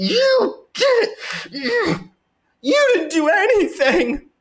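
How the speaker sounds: very high, heated, angry yelling. Commenting on a candidate's clip, imitating Chris yelling angrily at his rival. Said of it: "He sounded more like he was mad and yelling at him".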